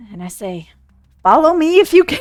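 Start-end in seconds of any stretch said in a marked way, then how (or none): 1.2-2.2 very frightened, much higher and louder. A player character shrinking back down to regular size calls out: very frightened voice. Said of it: "in a very frightened voice".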